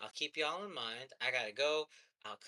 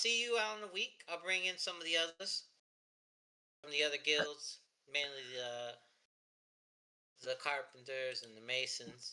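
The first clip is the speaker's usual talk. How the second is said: put-on southern-accented, blue-collar working man's voice. Narrator voicing a character in a role-play game, southern accent. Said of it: "your automatic voice is southern".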